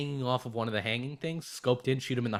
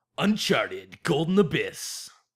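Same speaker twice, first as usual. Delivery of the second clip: loud, dramatic announcer voice; 3 semitones higher, 6 dB louder than usual. Announcing a game title before discussing it: dramatic announcer voice. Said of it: "Here comes the announcer voice".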